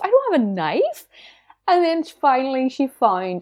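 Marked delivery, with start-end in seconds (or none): 0.0-1.1 acted freaking out, higher. Retelling being searched at airport security: imitating own past panic. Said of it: "I was, like, freaking out".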